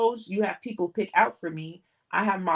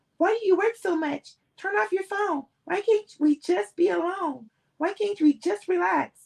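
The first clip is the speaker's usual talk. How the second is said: very high-pitched, whiny voice; 11 semitones higher than usual. A man mimics what every girlfriend he's had says, in a high, whiny voice. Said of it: "he put on a high, whiny voice".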